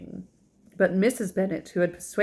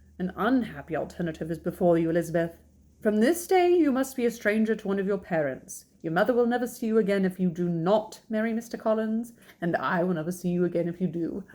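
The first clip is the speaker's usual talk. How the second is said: ordinary delivery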